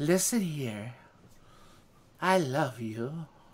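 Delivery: low, soft, sexy robot voice. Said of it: "the sexy voice, robot voice".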